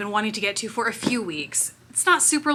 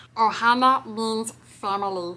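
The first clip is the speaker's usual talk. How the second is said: put-on cartoon alien creature voice. Showing the Ohana eyeshadow palette, doing a Lilo and Stitch voice. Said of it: "I'm cringing right now doing these voices".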